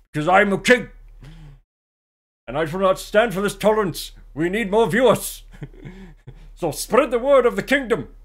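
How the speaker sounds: put-on Scottish accent throughout. Streamer thanking viewers on the Twitch anniversary while posing as a king, in a Sean Connery accent. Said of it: "Why am I Scottish?".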